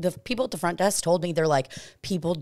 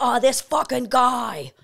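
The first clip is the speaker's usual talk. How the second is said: put-on Boston accent, higher pitch; 8 semitones higher, 5 dB louder than usual. Recounting locals met at a hotel bar last night, doing a boston accent impression. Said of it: "just saying Boston stuff".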